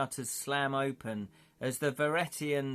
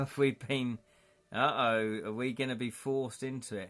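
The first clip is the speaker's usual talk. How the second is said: ordinary delivery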